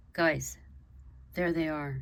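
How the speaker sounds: usual speaking voice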